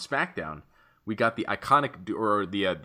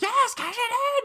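acted-out screeching yell, very high-pitched. Act out Carmella at the ref who is taking so long, imitating Carmella yelling. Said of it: "she just kept yelling".

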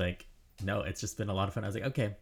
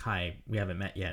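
plain

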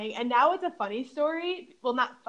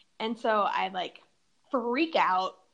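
plain

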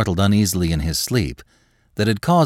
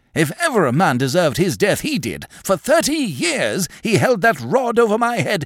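agitated, excited outcry, pitched very high; 9 semitones higher than usual. A man springs up from his chair, seizing a woman's hand: crying out excitedly. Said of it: "springing up excitedly".

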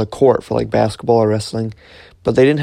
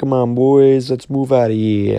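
put-on Italian-American New Yorker accent. Speaker retelling what they said while hunkered down with the group, Italian New York accent. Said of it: "doing like my Italian accent, like, come, or like New York".

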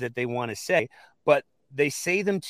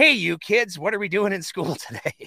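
put-on adult voice pitched up like a childish meme voice; 6 semitones higher than usual. Retelling a skateboard meme: Steve Buscemi meme voice. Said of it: "Steve Buscemi comes around the corner with the skateboard and he's like".

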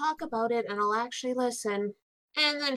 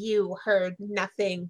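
theatrical, pointed, dramatic in-character tone; 5 semitones lower than usual. Voicing Tika pointing dramatically at Mavar: dramatic in-character warning. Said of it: "Tika just looks at Mavar and is like".

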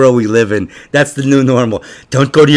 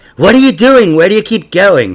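high, puzzled, questioning voice; 7 semitones higher than usual. Retelling being questioned about leaving: imitating Carl. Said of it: "That's a pretty decent impression".

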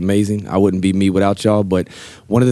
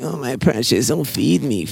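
small, high-pitched, creature-like little voice; 5 semitones higher, 3 dB quieter than usual. Describing the craving inside you as a little Smeagol: Smeagol voice. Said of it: "that little Smeagol inside you that's saying".

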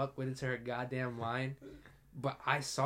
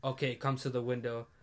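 plain

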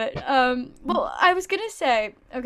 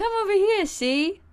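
put-on, pitched-up mid-Atlantic accent; 8 semitones higher than usual. Describing the mustached man on steak sauce bottles, speaker mimics his mid-atlantic accent. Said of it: "speaking in like a mid-Atlantic accent".

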